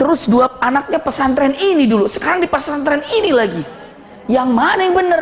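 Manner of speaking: high, rising, indignant yell.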